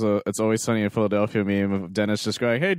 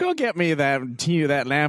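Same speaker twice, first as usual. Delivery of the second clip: put-on teenage-sounding villain voice, pitched up, unthreatening; 5 semitones higher than usual. Mocking the movie villain's voice: Jafar sounding like a teenager. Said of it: "'Cause he sounds like a teenager".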